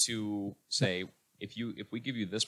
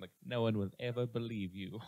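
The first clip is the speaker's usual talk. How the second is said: put-on laid-on-thick British accent. Retelling a scene where Chewie turns to a woman, in a thick British accent. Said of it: "Just in like a thick British accent".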